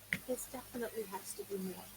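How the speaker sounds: very soft, hushed mutter under the breath. Speaking in character about a box beside others: talking under her breath. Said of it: "she's kinda talking under her breath".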